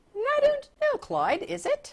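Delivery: very high, swooping put-on British accent. Answering the other speaker's question: put-on British accent. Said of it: "I just threw in that accent".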